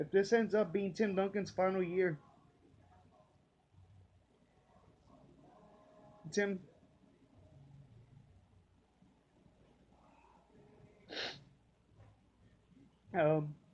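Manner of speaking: choked-up, emotional voice, on the verge of tears. Thanking a retiring player personally from the heart: emotional, choked up. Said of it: "I'm trying to get emotional right now".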